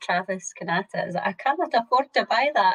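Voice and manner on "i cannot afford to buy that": put-on Scottish accent. Reading a commenter's words aloud, in a Scottish accent. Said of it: "I can just really hear a Scottish accent".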